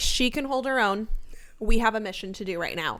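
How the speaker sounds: ordinary delivery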